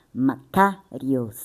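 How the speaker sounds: Makarios with the ka syllable leaned on. Explaining the greek word makarios: stress on ka of makarios. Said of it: "K ele é mais enfatizado".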